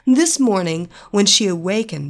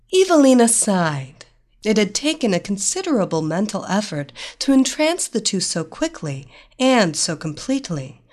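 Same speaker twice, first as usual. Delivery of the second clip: usual speaking voice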